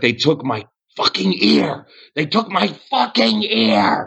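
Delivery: furious, livid yelling. Narrating the scene after Parnas is freed from his bonds, retelling Parnas's furious yell. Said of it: "He's just so pissed".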